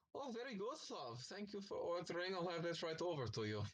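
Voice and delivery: put-on high, loud, vague European accent. The narrator voices a barmaid who comes up to the players, vague European accent. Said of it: "Is she German?".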